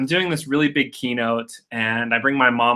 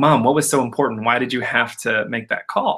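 plain

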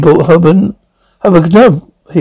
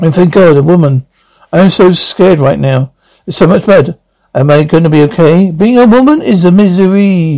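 ordinary delivery

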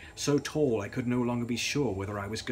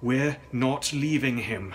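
severe, resolute, stern, firm tone; 2 semitones higher, 4 dB louder than usual. Narrator as the storyteller answering Gladys about leaving the injured man, stern. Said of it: "I said sternly".

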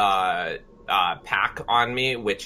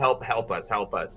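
normal talking voice

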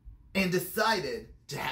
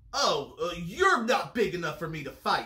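ordinary delivery, nothing marked

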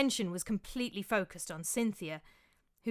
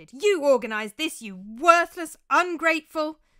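very loud, shrill, yelled shout; 6 semitones higher, 10 dB louder than usual. A woman roots a man out from under the couch, shouting at him. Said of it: "she shouted".

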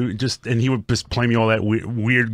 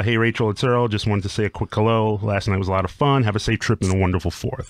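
usual speaking voice

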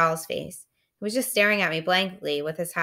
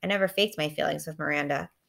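ordinary delivery, nothing marked

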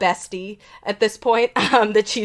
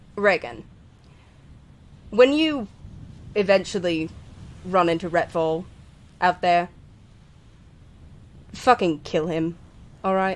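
lowered, hushed voice dropped down low; 3 semitones lower, 4 dB quieter than usual. Acting out what a man told the listener, in a lowered voice. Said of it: "he lowers his voice".

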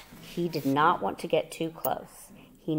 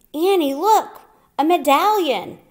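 very loud, high, far-carrying shout; 12 semitones higher, 11 dB louder than usual. Narrator reads Jack calling to Annie on the hilltop, shouting. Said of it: "shouted Jack".

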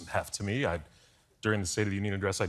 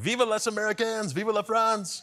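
very high, shrill, cheering yell; 14 semitones higher than usual. Retelling a colleague shouting on returning to the hotel at dawn: imitating someone shouting. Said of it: "is just shouting at this point".

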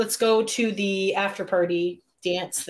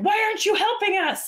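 high, indignant yelling. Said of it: "the lady starts yelling at the guy".

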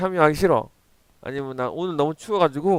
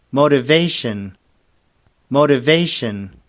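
American English accent; 4 dB louder than usual. Speaker modeling a word for students to repeat; American pronunciation. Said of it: "미국식 발음으로".

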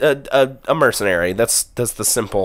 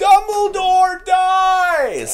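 very high put-on shriek, "dies" drawn out; 3 dB louder than usual. Retelling yelling out as a movie began in silence: retelling a yell. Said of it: "and I just yell".

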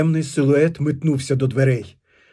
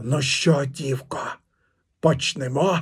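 put-on hoarse, wheezing rasp; 5 dB quieter than usual. A knife-holding stranger addresses the girl Dartsia: hoarse rasp. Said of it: "прохрипів".

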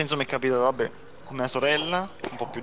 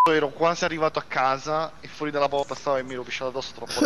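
ordinary talk, nothing marked

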